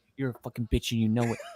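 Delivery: eerie, low, creepy half-whisper, all breath. Imitating a coach caught on camera: imitating a creepy half-whisper. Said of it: "what was that creepy ass whisper".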